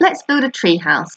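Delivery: plain reading voice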